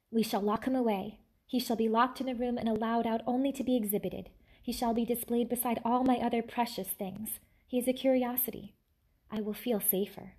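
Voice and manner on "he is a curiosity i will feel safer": plain reading voice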